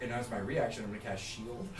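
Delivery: ordinary delivery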